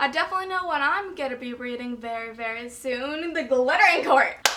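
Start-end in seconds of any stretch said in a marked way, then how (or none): 3.3-4.5 bursting with excitement. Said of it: "Sorry, I'm really excited for it".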